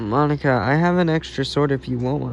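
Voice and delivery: ordinary talk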